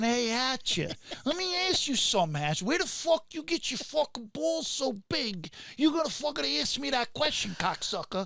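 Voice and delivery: put-on New York Queens accent. Quoting a film character with a very thick Queens dialect: thick Queens New York accent. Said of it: "he has a very thick Queens, New York dialect like this".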